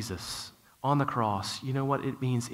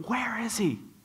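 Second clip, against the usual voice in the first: very high, shrill yell, acted out; 11 semitones higher than usual. Retelling asking strangers in a store where someone went, retelling a yell. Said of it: "I'm just yelling".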